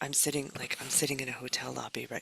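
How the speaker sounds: soft, hushed, half-whispered stage aside. Describing where you're sitting right now: half-whispering. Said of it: "I don't know why I'm whispering that".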